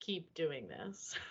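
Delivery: put-on very soft, quiet, stoic, solemn, serious tone. Retelling a first reaction to a video: imitating own stoic, serious tone. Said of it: "I was so stoic and serious".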